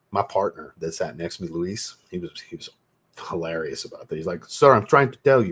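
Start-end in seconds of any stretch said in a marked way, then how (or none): 4.4-5.5 put-on thick Spanish-sounding accent, laid on heavy, raised and high.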